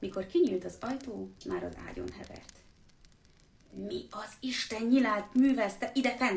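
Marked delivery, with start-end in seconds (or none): 3.7-6.4 growled, snarling through gritted, clenched teeth. Reading a story, the uncle confronting Harry in his room: growled through gritted teeth. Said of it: "hörögte fogcsikorgatva Vernon bácsi".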